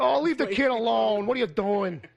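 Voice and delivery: laid-on Jersey-Brooklyn accent. Imagining biblical dialogue in The Sopranos accents, speaking to Abe: Jersey, Brooklyn accent. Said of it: "kind of that Jersey, Brooklyn kind of accent".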